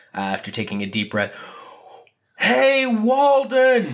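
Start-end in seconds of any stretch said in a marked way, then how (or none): 2.4-4.0 very high, drawn-out, full-lung bellowing yell. Voicing a character who yells a name at the sky: yelling as loudly as he can. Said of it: "yell Walton's name, uh, as loudly as he can".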